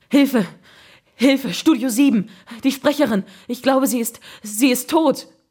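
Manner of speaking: high-pitched, stumbling, broken-up, halting stammer. A technician calls for help on the telephone, stammering. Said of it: "stammelte dann in den Apparat".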